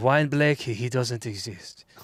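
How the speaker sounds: put-on hobo voice with French accent. Continuing a bit as a drunken Montreal hobo on the sidewalk. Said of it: "I like the French accent".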